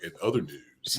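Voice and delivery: put-on deep voice. Recalling a host moving the show on while George still laughs, imitating Gerard's deep voice. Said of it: "when Gerard goes into the deep voice".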